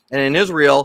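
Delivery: ordinary talk, nothing marked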